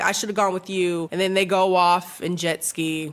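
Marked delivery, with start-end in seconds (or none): none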